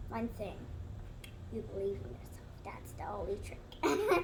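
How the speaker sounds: hushed, secretive voice.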